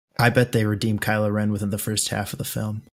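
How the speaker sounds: low, hushed, secretive half-whisper. Close to the mic, letting the listener in on a little secret, half-whispering. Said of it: "That's why I'm whispering".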